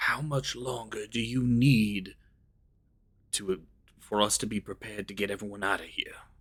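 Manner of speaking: soft, hushed, quiet half-whisper. Sneaking up behind the mayor in character: quiet half-whisper. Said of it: "whisper to her quietly".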